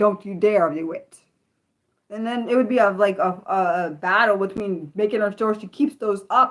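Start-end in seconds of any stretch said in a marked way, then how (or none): 0.0-1.2 stern, firm, no-nonsense voice. Retelling a warning to a child: retelling own firm voice. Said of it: "had to put the firm voice on".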